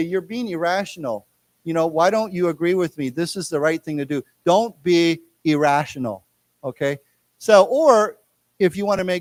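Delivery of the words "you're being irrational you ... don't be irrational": ordinary delivery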